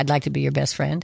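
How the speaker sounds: ordinary talk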